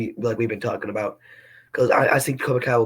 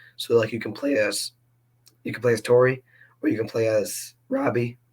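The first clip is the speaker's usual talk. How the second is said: voice cracking and breaking. Listing playable fighters for an imagined game, voice cracking. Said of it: "I keep having voice cracks".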